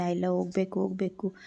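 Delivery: normal talking voice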